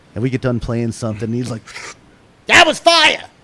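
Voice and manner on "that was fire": put-on thick New York accent, very loud, very high. Retelling what the dad said after practice, imitating dad's heavy New York accent. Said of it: "he's got a very heavy".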